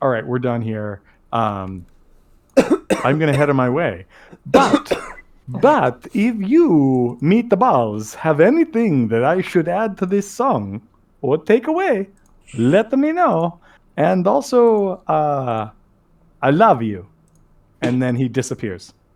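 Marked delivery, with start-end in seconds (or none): 4.4-17.1 grand vampire count voice, swooping and sing-song. Voicing the game character Ronaldo as he leaves the players, in a Dracula voice. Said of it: "he says, like".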